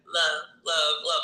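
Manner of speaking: ordinary talk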